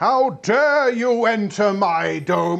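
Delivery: very loud, high, large booming emperor voice. Describing an emperor who looks down on you, speaking his line in a large booming voice. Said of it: "says in a large booming voice".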